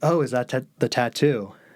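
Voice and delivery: ordinary talk, nothing marked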